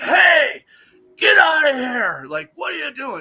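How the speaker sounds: very high, loud, shouted yell. Retelling a night encounter with a creature: imitating a loud yell. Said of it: "I yelled at it really loud".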